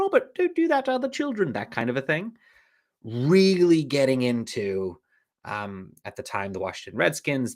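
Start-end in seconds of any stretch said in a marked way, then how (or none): 0.0-1.5 put-on very high-pitched, ladylike colonial British accent. Describing his mom scolding him, in her colonial british accent. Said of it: "a lovely lady with a colonial British accent".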